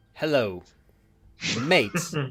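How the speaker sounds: put-on, casual, slangy commoner voice. Prompted to drop into commoner slang for a chat: commoner slang voice. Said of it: "do a bit of slang for me".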